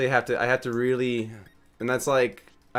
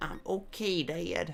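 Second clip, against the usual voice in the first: put-on high-pitched cartoon character voice, like a young boy; 7 semitones higher, 9 dB quieter than usual. Imagining Bobby as a Butterfree answering his dad: voicing Bobby. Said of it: "with Bobby as the Butterfree".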